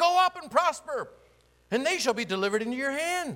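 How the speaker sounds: high, loud, sarcastic mocking voice.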